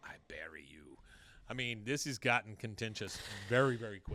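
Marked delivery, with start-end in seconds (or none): 0.0-1.0 very quiet, very low under-the-breath mutter. Recapping a show scene at a fence; imitating Min muttering under her breath. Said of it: "Min under her breath says".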